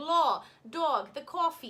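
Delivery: very slow, effortful, attempted Brooklyn accent. Retelling practicing for an audition the night before: attempted Brooklyn accent. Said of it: "how to do a Brooklyn accent".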